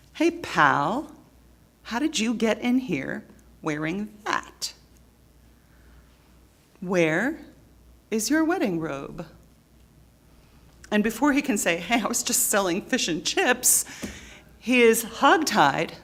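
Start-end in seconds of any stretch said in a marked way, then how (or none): 0.2-9.3 threatening, hostile, confronting, menacing tone. Retelling a king confronting a guest in a Gospel parable, mock-menacing tone. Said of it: "said with a sort of a menacing tone".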